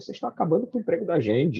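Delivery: high, fast, desperate, rattled-off delivery. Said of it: "né, desesperado".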